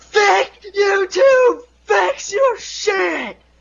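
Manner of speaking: shrill, very high, dragged-out screaming. Telling a friend how a man reacted to a troll account claiming his video, imitating someone screaming. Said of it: "And he starts screaming".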